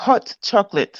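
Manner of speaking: put-on, attempted London accent. Asked to let the others hear, speaker tries his own London accent. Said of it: "my version of my my my London uh accent".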